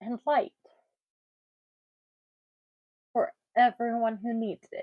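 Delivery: tearful, weeping and crying through the words. Lighting a Hanukkah candle and dedicating it, speaking while crying. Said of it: "I have no idea why I'm crying".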